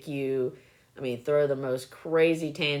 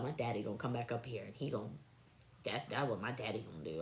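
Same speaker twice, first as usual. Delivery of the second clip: mock, very quiet, hushed, angry little-girl voice; 4 semitones lower, 13 dB quieter than usual. Retelling what an upset little girl said: imitating an angry girl. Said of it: "She was mad".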